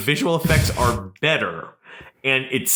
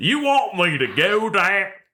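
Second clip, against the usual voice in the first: put-on Southern American accent as a British speaker attempts; 6 semitones higher than usual. Voicing a guy in a video filmed in Cape May: British attempt at Southern accent. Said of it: "I'm doing like a British person trying to do a Southern accent right there".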